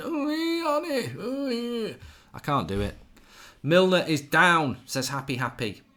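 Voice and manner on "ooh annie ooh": very high, strained, constipated-sounding Italian accent. Attempting a character voice, admitting it isn't easy, constipated-Italian-sounding voice. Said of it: "I just sound like a constipated Italian".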